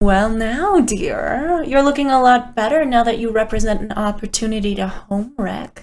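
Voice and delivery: purring voice throughout. Game master voicing a figure approaching Ariadne from behind, purring. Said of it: "approach you from behind and purr".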